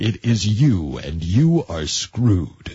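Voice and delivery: low, dramatic movie-trailer announcer voice. Explaining how setbacks feel, the speaker voices the announcer voice in our minds. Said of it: "we get that announcer voice going".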